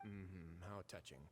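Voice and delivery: careless, uncaring, unimpressed dismissive tone. Answering a plea to let others go: uncaring, dismissive tone. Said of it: "you have to say it like that, dude?".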